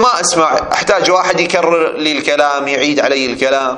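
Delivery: ordinary talk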